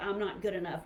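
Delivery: ordinary talk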